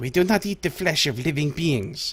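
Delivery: angry, hissed voice. A sun seer answers your offering, hissing angrily. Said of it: "she hisses angrily".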